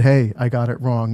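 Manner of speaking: ordinary talk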